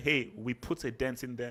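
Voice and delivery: ordinary talk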